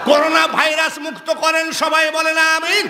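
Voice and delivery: rousing call, belted out high and loud.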